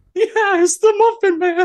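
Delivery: very high, loud squeaky voice. Doing impressions, answering a question about the Muffin Man, Gingerbread Man voice. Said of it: "sounding like the gingerbread man from".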